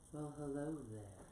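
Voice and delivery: soothing calm narrator voice, bordering on creepy. Imitating the calm app bedtime story reader: soothing Matthew McConaughey voice. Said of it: "but it's his soothing".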